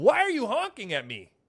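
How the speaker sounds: irritated man's voice, upset, accusing, demanding. Retelling what a man asked at the window, imitating an upset man. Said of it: "And he's upset".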